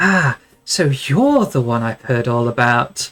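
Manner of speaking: grinning, delighted, smiling voice. Narrator voicing a woman who steps out and greets you with a large grin. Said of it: "a large grin comes across her face".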